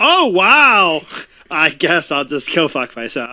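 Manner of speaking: loud, exclaimed delivery. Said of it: "that was loud".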